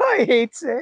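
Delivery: very high-pitched delivery. Retelling a scene where sand is thrown at Anakin: imitating Anakin. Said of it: "Anakin's like".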